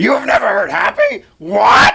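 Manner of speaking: very high, scratchy, rough puppet voice. Retelling what everyone on the boat said to the speaker, in a Muppet voice. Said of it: "I like your Muppet voice".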